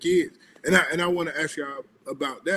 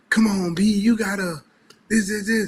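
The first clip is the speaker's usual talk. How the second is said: loud, high, mock cheering yell; 6 semitones higher, 5 dB louder than usual. Retelling a mom at her son's game: imitating a mom yelling. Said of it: "yelling at me the whole game".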